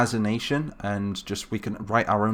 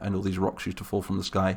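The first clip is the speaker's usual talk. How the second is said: normal talking voice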